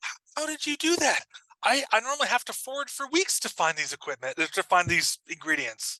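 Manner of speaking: high, stammering little rabbit voice. Voicing a rabbit amazed that a player found ingredients: voicing the rabbit. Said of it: "The rabbit looks at you and goes".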